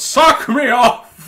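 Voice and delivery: loud, barked shout, pitched very high. Acting out Santa in a workshop, shouting a demand at the elves. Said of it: "and shouts".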